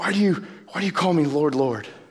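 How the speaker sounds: put-on frustrated, exasperated tone. Quoting a question to followers who don't obey, imitating Jesus' frustration. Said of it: "You can hear the frustration in Jesus' voice".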